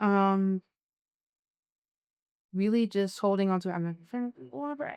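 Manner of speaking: trying not to cry, holding back tears. Answering a last interview question about what keeps them grounded, holding back tears. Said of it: "I'm not gonna cry".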